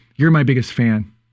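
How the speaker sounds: plain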